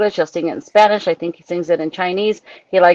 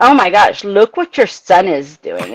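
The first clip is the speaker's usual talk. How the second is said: mock haughty, snooty sing-song tone, loads of attitude. A mother retells another lady's remark about her son, mocking a snooty attitude. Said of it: "said it with the biggest attitude".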